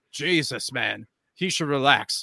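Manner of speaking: ordinary talk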